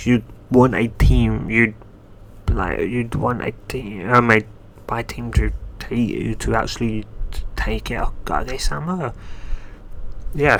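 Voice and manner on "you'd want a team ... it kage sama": stunned, halting, stammering delivery. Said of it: "somewhat stunned".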